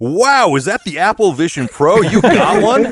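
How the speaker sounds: very high, loud, carrying, drawn-out exclamation. Retelling what the TSA guy asked at security: imitating a loud exclamation. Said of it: "really loudly".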